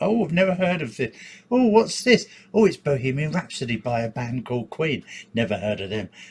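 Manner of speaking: sarcastic, sing-song, mocking fake innocence. Mocking reaction-video makers who pretend not to know songs: sarcastic imitation of reaction-video makers. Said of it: "I was getting a bit sarcastic there".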